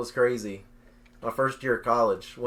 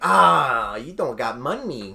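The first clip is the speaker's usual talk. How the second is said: very slow, loud, dragged-out sci-fi creature voice; 5 dB louder than usual. Retelling what a man said when walking away, imitating a man like Jar Jar Binks. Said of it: "He sounded like Jar Jar Binks".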